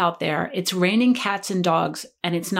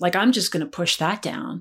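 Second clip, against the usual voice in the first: normal talking voice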